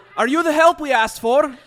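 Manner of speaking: very loud, very high Scottish dwarf brogue. Voicing a dwarf character in a group story, scottish dwarf accent.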